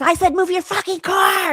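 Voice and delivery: screamed, very high-pitched and loud. Retelling a man screaming at her while she sat in her car, imitating someone screaming. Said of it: "He's screaming at me".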